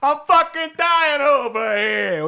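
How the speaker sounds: botched put-on voice, very high, loud, drawn out. Retelling a TV scene about a dying smoker: terrible Johnny Sack impression. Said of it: "a terrible impression of Johnny Sack".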